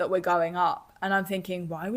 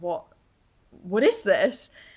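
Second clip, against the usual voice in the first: mock-terrified voice, reenacted terror; 4 dB louder than usual. Squeezing Sam's hand, the speaker is retelling terrified words. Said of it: "I'm absolutely terrified now".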